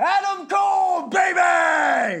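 full, very loud, very high, stretched-out yell. Warning listeners about their earbuds, then: really loud shout. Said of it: "I'm gonna do it really loudly here".

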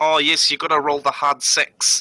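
put-on New Zealand accent on the whole line. Asked to say it in a New Zealand accent, speaker repeats the line in a New Zealand accent. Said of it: "Say it in a New Zealand accent".

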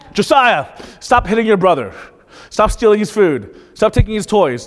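scolding dad yelling voice. Father retells yelling at his son, in his dad yelling voice. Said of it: "that's my dad yelling voice".

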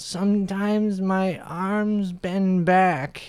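put-on high old-lady voice, very slow, very drawn-out drawl. Retelling what a young woman in a waiting room said: imitating an old lady voice. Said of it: "Why are you talking like an old-ass lady?".

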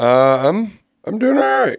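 squeaky voice. Answering when asked on air how they're doing: squeaky voice. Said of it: "Sounds very squeaky".

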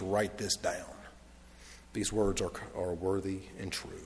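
low, very quiet, hushed, commanding tone. Speaker quoting what he said, retelling a commanding voice. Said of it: "in a very commanding voice".

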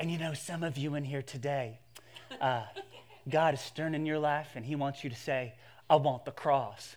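hushed, soft preacher-style stage whisper. Retelling a trendy pastor speaking at a stadium, half-whispering pastor voice. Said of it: "he gets into his whispering pastor voice".

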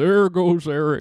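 booming, very loud horse's voice. Joking about cows seen on the drive home, voicing one in a horse voice. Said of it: "That was clearly a horse's voice".

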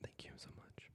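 soft, unvoiced whisper.

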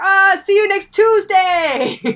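put-on accent from Georgia. Imagining how Jude would say the phrase, Jude's Georgian accent impression. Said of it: "in his like bloody Georgian accent".

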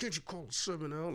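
mimicked under-the-breath muttering. Retelling what the pit manager said at the dice game, imitating muttering under breath. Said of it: "like under his breath?".

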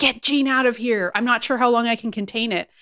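put-on pained voice. Retelling a character's plea while clutching her body: imitating Emma in pain. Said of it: "in a lot of pain, ... clutching her body".

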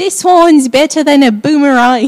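bad put-on Australian accent, high and loud. Praising a wine: bad Australian accent impression. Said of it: "the Australian impression segment".

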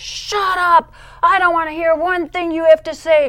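mock very loud, very high, furious snapping. Retelling how the speaker answered the Lord's voice: retelling being so mad. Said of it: "I am so mad at you".

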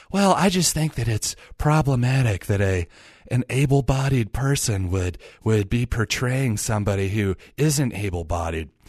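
mild, calm public-radio announcer voice. Mocking how social justice people talk: NPR voice. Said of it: "I'll go with my NPR voice".

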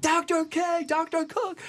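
several very high, sing-song calling voices.

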